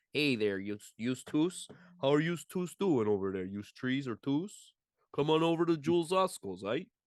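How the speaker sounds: put-on Chicago-style accent. Joking around with a co-speaker, doing a Chicago accent. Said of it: "people from Chicago sometimes have that".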